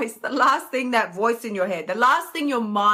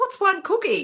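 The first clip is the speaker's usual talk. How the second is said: usual speaking voice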